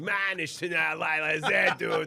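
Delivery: put-on Boston accent, loud and drawn-out. Retelling a family Seder where everyone joked around: joking Boston accent. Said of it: "doing our masshole accents".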